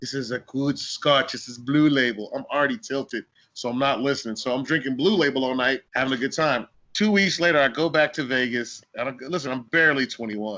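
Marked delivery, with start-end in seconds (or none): 0.0-2.3 speaking in a put-on Persian accent. Retelling a friend at dinner showing him the scotch, in a persian accent. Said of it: "in that Persian accent".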